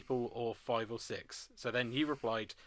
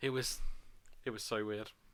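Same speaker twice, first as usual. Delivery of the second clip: plain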